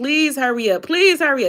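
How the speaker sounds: play-acted frantic, desperate, screaming voice. Retelling a phone call with a big sister, re-enacting screaming the plea. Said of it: "I'm screaming in my sister's ear".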